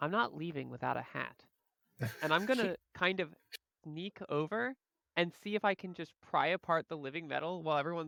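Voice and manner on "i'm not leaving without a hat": quiet muttered whisper under the breath. Playing a character who plans to take a tiara unseen: whispering under breath. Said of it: "I whisper under my breath".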